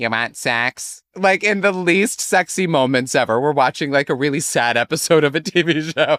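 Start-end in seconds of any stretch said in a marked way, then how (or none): 0.0-1.0 cartoon voice, lower pitch, slower pace. Acting out what she says to her boyfriend at odd moments: Lois from Family Guy voice. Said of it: "That sounded like Lois from Family Guy".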